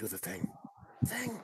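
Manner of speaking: very quiet, hushed, breathy whisper. Whispering to Fangs to do the thing: whispering in character. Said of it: "I look over to Fangs and I whisper".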